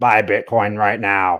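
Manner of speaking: very low, deep, slow smoker's voice. Joking about how you expected Michael Saylor to sound, do one of those cigarette voices. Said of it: "or like one of those cigarette voices".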